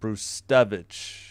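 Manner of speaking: Brustevich with stress on middle syllable TE. Reading out a list of names, stress on second syllable of brustevich. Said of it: "So you emphasize the second syll- syllable".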